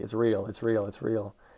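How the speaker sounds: muttered under the breath. Retelling a show scene where a possessed character mutters: imitating someone muttering under breath. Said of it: "she's just kinda muttering under her breath".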